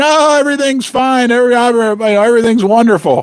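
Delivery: chuckling and laughing through cheerful, stumbling words. Imitating a patient on opiates in hospital: imitating a drugged patient laughing. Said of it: "in the hospital laughing, saying".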